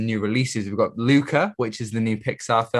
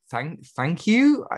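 mock unsure, hesitant voice; 6 semitones higher than usual. Mimicking how someone else said thank you, mock-unsure. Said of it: "You sounded so unsure. Like".

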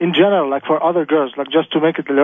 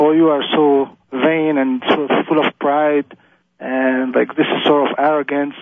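ordinary delivery

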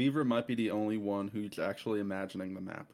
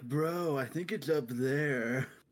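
slow, high-pitched, dragged-out stoner drawl; 5 semitones higher than usual. Joking about how the stoner wizard would talk: imitating a stoner wizard.

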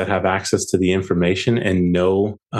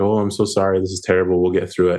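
mock-consoling put-on tone, faster. Retelling their dad's reaction to the job loss, in a mock-consoling tone. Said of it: "my dad was all consolatory".

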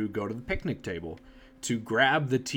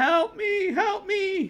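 very high, loud, tearful wailing cries. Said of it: "And I kept going".

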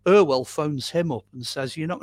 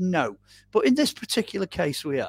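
ironic, mocking, sarcastic sing-song reply; 3 semitones higher than usual. Retelling how the man on the other end answered Gary, imitating a sarcastic reply. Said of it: "was being a bit sarcastic".

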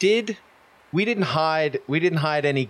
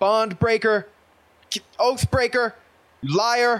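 angry, loud shout. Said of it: "shout at it".

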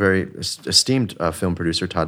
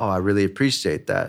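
acted calm, cool delivery. Recounting a phone call to listeners, retelling how you played it cool. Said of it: "And I'm cool on the phone".

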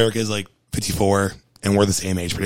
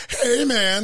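Chicago accent, pitched very high. Showing a TikTok tutorial's Bill Murray impression: Bill Murray impression. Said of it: "a tutorial on TikTok of how to do a Bill Murray impression".

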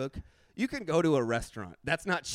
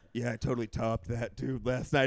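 voice pushed low and deep; 5 semitones lower than usual. Retelling what Billy said the morning after: imitating Billy's deep voice. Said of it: "He's making his voice all deep".

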